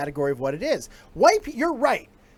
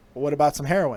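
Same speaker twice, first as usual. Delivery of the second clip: put-on casual tone, lower; 6 semitones lower than usual. Retelling a guy outside the bodega offering heroin: imitating a casual offer. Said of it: "he said it so casually".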